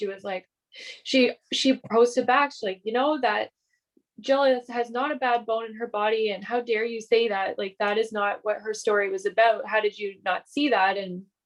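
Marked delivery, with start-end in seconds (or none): none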